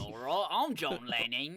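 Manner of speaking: put-on pushy, aggressive, in-your-face Australian accent. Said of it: "You also give him an aggressive Australian accent".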